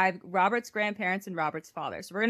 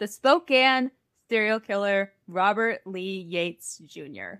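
very slow, drawn-out, deliberate delivery. Host opening the episode by announcing today's topic, talking very slowly. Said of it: "I won't be talking this slow this entire time".

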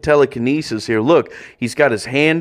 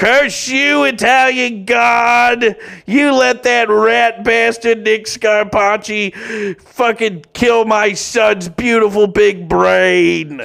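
very high, drawn-out, acted wailing screaming rant; 9 semitones higher than usual. Retelling a mother whose son was hurt screaming at the Vatican: imitating a mom screaming. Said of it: "just screams at the Vatican".

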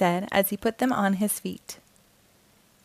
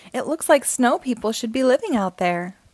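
plain

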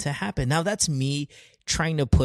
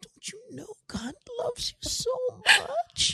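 very high, tearful voice, near sobbing; 4 dB quieter than usual. Retelling how people say a line to them: imitating someone almost crying. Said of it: "it almost sounds like they're crying when they say".

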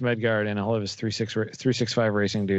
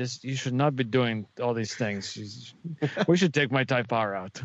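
clumsy, bad, thick put-on Polish accent; 3 semitones higher than usual. Quoting him on the speaker's modified Civic, terrible Polish accent. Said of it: "he's got a thick Polish accent, which I did a terrible job of".

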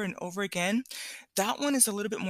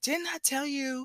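put-on dramatic mean menacing voice, higher; 6 semitones higher than usual. Retelling a story where an uncle scolds a girl: dramatic mean imitation of an uncle. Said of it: "I'm being dramatic".

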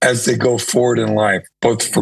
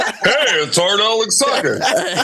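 very slow, deliberate, drawn-out, pitched-up radio announcer voice; 9 semitones higher than usual. Retelling how the host introduced the guest: imitating a radio announcer voice. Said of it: "Then you're like".

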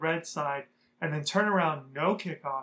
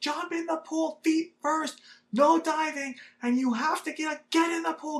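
very high, shrill, full-throated, top-of-the-lungs screaming; 11 semitones higher than usual. Retelling how a man screamed at them by a pool, acting out his top-of-lungs scream. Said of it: "screaming at the top of his lungs".

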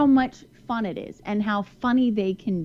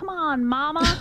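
put-on sweet, cute, high, toddler-like Southern accent; 7 semitones higher than usual. A mother quotes her daughter, who is just starting to speak, in a cute Southern accent. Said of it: "this Southern accent".

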